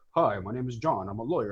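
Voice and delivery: fake American accent, non-native speaker. Retelling a man switching into an American accent to introduce himself, non-native speaker's American accent.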